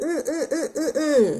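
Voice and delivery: high, childlike mock grunting sounds.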